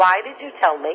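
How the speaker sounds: ordinary delivery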